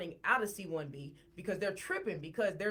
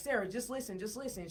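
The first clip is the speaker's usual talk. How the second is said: ordinary delivery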